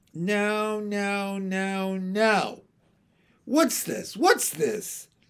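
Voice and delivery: high, thin, crackly little voice, unhurried. A voice calls from the back of the shop as twins cry, high, thin, crackly little voice. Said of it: "A high, thin, crackly little voice".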